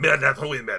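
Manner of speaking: imitated French accent. Retelling how a man's french accent sounded, imitated french accent. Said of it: "But the way his French accent comes".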